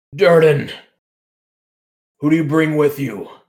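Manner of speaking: grand, high, booming call. A cloaked figure calls down to Durden about his companions, booming voice. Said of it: "he calls down in this booming voice".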